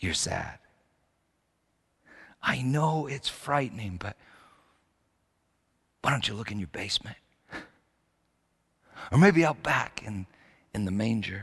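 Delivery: whispered voice. Voicing Jesus calling to Peter from behind a curtain: whispering as Jesus. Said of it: "he's whispering".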